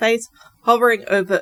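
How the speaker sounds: ordinary delivery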